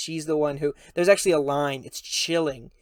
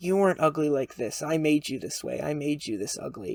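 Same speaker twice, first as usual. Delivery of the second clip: put-on tearful voice. Retelling a film scene where a dying character confesses: imitating Blanche crying. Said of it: "And Blanche is crying".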